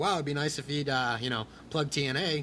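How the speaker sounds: ordinary talk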